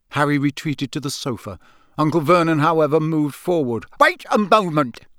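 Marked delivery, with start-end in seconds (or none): 4.0-5.0 high, roaring, bellowing shout. Narrator reading an uncle stepping forward and shouting at the fire, bellowing. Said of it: "he bellowed at the fire".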